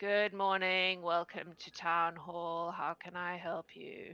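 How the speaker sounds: flat uninterested clerk voice. Voicing a bored elven clerk greeting visitors at town hall: bored elven clerk. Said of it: "a very bored-looking elven man who looks up and he goes".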